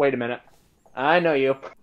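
usual speaking voice

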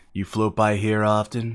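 sensual, seductive whisper. Voicing another player's drawn creature approaching a Magikarp: sensual whisper. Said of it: "sensual whispers".

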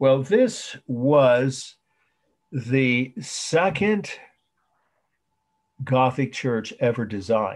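loud, very slow, clearly spoken dictation. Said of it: "say it slowly".

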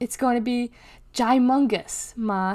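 plain

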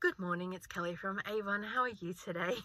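customer-service phone voice. Speaker retelling showing a woman her telephone voice, polite telephone voice. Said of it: "Do you want to hear my telephone voice?".

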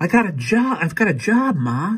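excited, very high, drawn-out and swooping. A son shares good news with his mother at dinner, excited. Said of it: "said Anthony excitedly".

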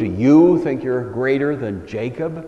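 heavy emphasis leaning hard on the word "you". Rereading a scripture question to show its emphasis: stress on you. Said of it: "Emphasis on the word you".

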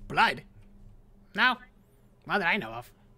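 twitchy, jittery, uncomposed devil voice. A game master answers a player's question as a twitchy spine devil. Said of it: "And you see that this spine devil, it's more twitchy than most devils. And not quite as composed as any other devil in Avernus I've seen so far".

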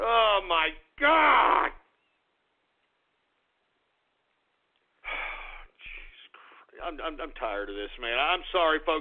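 distant, detached voice. Host apologizing to the audience during the broadcast, sounding distant. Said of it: "I know I sound a little distant here".

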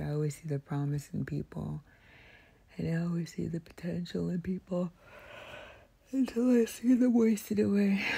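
yawny speech, talking through a yawn. Talking to a listener late, right in their ear, yawning while talking. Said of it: "Sorry for yawning in your ear again".

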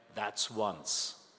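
hushed whisper, close to the ear. Telling a joke, the wife whispers to the horse: retelling a whisper. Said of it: "leaned forward and whispered in the horse's ear".

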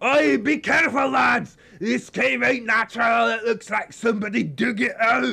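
very thick, laid-on Scottish brogue. A player's character warns the party in a cave, very thick Scottish accent. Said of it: "in a very thick Scottish accent".

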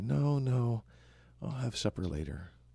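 drowsy, half-asleep mumble with a drawn-out no. Voicing a character roused by banging on the door, in a sleepy mumble. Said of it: "you just kind of sleepily say".

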